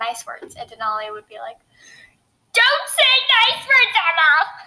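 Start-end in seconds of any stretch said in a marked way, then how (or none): 2.5-4.3 put-on very high-pitched, shrill, scolding shrieking scream. Recalling a friend's reaction during Fortnite, speaker does a screaming Denali impression. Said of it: "Why are you screaming?".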